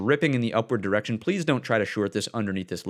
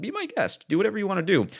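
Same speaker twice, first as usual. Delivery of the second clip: voice cracking up high partway through; 9 semitones higher than usual. A speaker tells listeners to do whatever they want, voice cracking. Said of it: "Little voice crack there".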